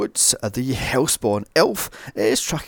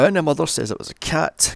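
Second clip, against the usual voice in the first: ordinary delivery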